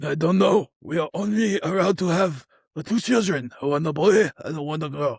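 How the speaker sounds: fake, put-on Japanese accent in samurai style.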